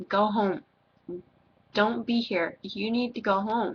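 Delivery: ordinary talk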